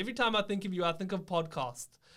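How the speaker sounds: put-on high-pitched South African accent. Speaker quoting what their dad says to them, in dad's south african accent. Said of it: "or he says in South, his South African accent".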